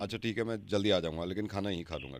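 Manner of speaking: low, soft, hushed murmur.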